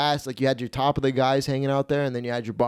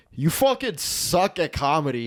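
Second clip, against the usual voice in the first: yelling, higher-pitched; 3 semitones higher than usual. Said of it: "yelling at that kid who just bombed".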